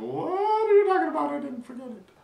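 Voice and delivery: very high, loud, protesting voice. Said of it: "And he was like".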